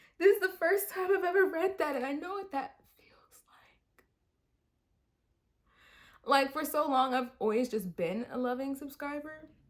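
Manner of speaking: choking up, close to crying. Reading a dedication to her subscribers for the first time, choking up, about to cry. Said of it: "I'm literally about to cry".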